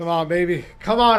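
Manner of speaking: fast, anxious, nervous delivery. Watching a match, urging the team on: nervous while watching. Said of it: "I'm nervous".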